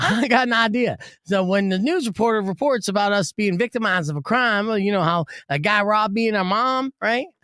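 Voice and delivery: put-on Southern accent, pitched a bit high. Acting out one twin sister syncing their robbery story, imitating a Southern accent. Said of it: "now they're Southern, by the way".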